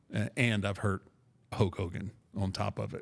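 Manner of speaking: plain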